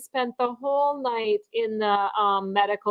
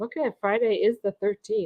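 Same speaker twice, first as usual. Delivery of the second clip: usual speaking voice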